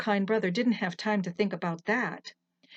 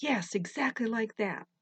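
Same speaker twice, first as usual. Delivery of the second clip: ordinary delivery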